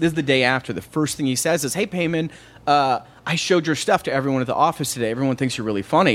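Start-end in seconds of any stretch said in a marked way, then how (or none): none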